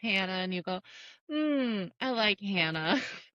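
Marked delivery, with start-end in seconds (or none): 1.3-3.0 put-on half-awake, groggy, out of it, very slow. Retelling the listener waking up after surgery, mock groggy. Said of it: "you were kind of like groggy".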